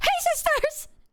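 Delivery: very high, sudden pop-out delivery. Describing a video where someone jump scares viewers: James Charles impression. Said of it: "James Charles, like, jump scares you and he goes".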